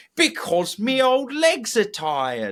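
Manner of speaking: goofy, very high, swooping put-on voice. Answering kids who ask why they're doing this, in a silly voice. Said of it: "respond like maybe in a silly voice".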